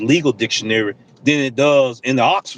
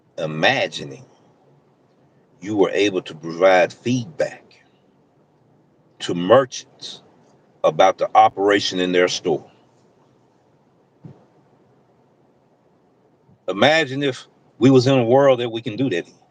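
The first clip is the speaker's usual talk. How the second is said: slow, much lower pitch; 5 semitones lower than usual. A delivery driver addressing his audience about driver ratings, talking slow. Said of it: "I'm gonna talk slow so it don't go over your head".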